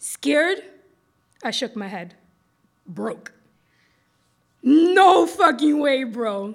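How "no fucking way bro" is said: big, booming, drawn-out bellowing delivery. He answers the narrator, pointing a finger at him, booming. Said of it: "he boomed".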